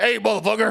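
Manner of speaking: belted out, very loud and very high. Joking about a voice heard in the head: Samuel L. Jackson voice. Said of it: "Or like Samuel L. Jackson's voice".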